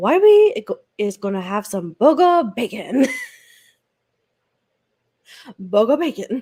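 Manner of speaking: loud, silly, sing-song dog voice. Retelling how mom talked for the dog, in a dog voice. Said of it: "my mom was doing the dog voice".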